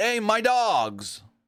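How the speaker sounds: high, slow drawn-out yell. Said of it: "he yelled".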